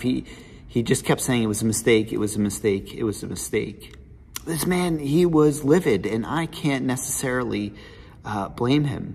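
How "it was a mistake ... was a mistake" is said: usual speaking voice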